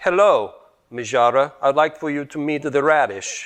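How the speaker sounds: loud, put-on made-up accent of unknown origin. Introducing the radish to the dish while cooking: unidentified put-on accent. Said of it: "I don't know why I'm using an accent".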